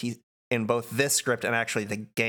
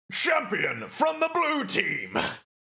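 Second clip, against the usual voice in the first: high-pitched, shouted villain voice. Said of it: "You're turning into Xehanort".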